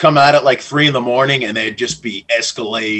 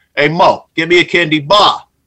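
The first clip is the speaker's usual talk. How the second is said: put-on Staten Island accent, word endings stressed; 6 semitones higher, 4 dB louder than usual. Retelling what people said on arriving in Staten Island: imitating a Staten Island accent. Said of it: "First thing I noticed was the accent".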